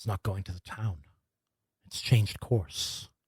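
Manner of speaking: barely audible, low, hushed whisper. A narrator voices the captain speaking to those beside her, whispering. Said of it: "she kind of whispers".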